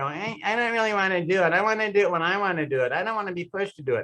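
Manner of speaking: put-on nasal tone, through the nose. Mocking people who resist being begged to do something, in a put-on nasal tone. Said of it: "they always have like a nasal tone and they go".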